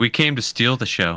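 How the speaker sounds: corny in-character hero delivery. Delivering a prepared line in character when asked: cheesy in-character line. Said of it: "Should I say my cheesy line?".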